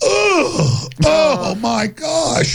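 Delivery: anguished groaning voice.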